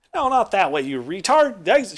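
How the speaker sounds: loud, high-pitched yell in character. Voicing a dwarven woman yelling at a player heading the wrong way: voicing a character yelling. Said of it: "she's yelling at you out".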